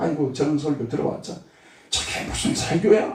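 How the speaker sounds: soft, hushed, whispering devil voice. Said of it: "이렇게 속삭이는 마귀 사탄".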